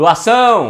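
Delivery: doação called out, heavy stress on -ção. Finding the stressed syllable by knocking at a door: doação called out, stress on ção. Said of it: "aí a sílaba tônica vai ser o são".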